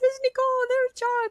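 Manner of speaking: crying out, very high and teary. Recounting seeing friends as blue lights in the void, the speaker retells crying. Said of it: "crying like".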